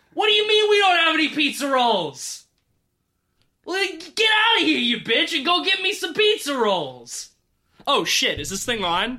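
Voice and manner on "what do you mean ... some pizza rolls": shrill, very high yell with wildly swinging pitch. Opening a podcast with a skit, yelling at mom. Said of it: "we definitely don't yell at our moms".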